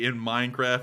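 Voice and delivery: ordinary delivery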